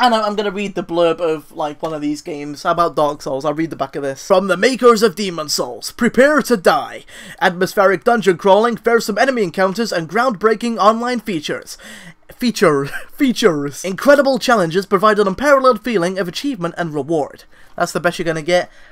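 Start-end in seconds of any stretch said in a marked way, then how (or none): 4.3-17.4 put-on American accent. Asked for an accent, reading a video game's back-cover blurb, american accent. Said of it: "can you do an American accent?".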